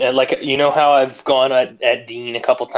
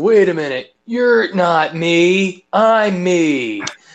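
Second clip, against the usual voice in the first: put-on stoner voice, higher pitched; 6 semitones higher, 3 dB louder than usual. Retelling what a wrestler said in the ring, imitating Baron Corbin like a stoner. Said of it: "that impression that you're doing sounds like a stoner".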